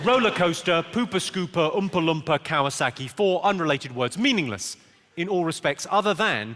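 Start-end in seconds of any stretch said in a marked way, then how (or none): 0.0-3.1 broad Newcastle Geordie accent. Showing words used for doing the Geordie accent. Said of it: "trying to do the Geordie accent".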